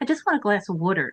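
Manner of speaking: put-on South Jersey accent. Retelling ordering at a restaurant: retelling own South Jersey accent. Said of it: "I say wooder instead of wa-".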